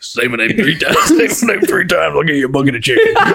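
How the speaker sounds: animated, flirty tone with pitch swooping all over. Asked why they sound like Beetlejuice, the speaker leans into a Beetlejuice voice. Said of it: "Sound like Beetlejuice".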